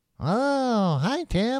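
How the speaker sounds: very high, soft, drawn-out oh. Showing off a Big Bird impression while another speaker judges it, cartoony Big Bird voice. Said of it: "It's a little too cartoony".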